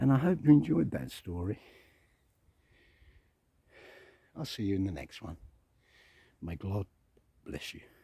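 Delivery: a bit out of breath, slightly winded. Signing off at the end of a story while going uphill, a bit out of breath. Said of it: "I'm a bit out of breath".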